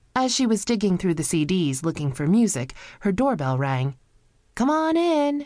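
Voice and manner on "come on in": loud, very high yell. Digging through CDs, she calls to whoever rang her doorbell, yelling. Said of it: "she yelled".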